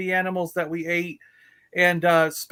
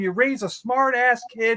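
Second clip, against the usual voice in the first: angry yelling; 5 semitones higher than usual. Retelling what he yelled at the speaker's mom, retelling angry yelling. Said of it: "He's yelling at my mom".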